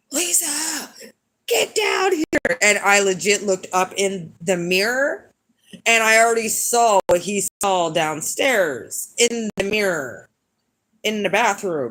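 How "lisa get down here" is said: very high, stretched-out, drawn-out scream. Retelling someone calling her from the kitchen: imitating someone screaming. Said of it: "he screams at the top of his lungs".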